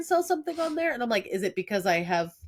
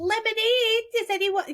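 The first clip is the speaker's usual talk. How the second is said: put-on very high, adorable little-kid voice calling out; 13 semitones higher than usual. Speaker recalls selling lemonade as a child, little kid's voice. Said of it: "in a little kid's voice".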